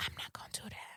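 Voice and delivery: hushed, very quiet, breathy whisper. Retelling what a three-year-old whispered in an ear: imitating Aria's whisper. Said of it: "she whispered in my ear how bi-, kids whisper".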